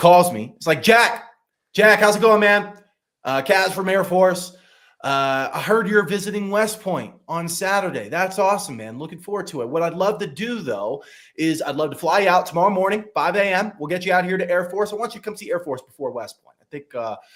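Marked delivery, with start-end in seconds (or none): 0.8-17.2 pushy, hard-selling, high, energetic delivery. Retelling a recruiting call from a coach: imitating an aggressive, energetic coach. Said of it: "literally how he talks".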